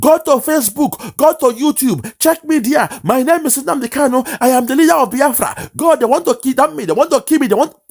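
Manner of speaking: very high, frenzied, frantic shouting. Retelling how a man shouted to onlookers near an airport car park, retelling Nnamdi Kanu shouting. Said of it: "The more he was shouting".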